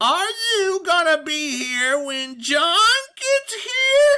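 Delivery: drawn-out, very high, slow, screechy voice. Narrator voicing the cat in the fireplace speaking to the man, slow screechy voice. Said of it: "said in a slow, screechy voice".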